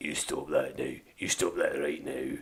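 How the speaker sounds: deep voice with a Scottish accent. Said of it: "I like the deep Scottish voice".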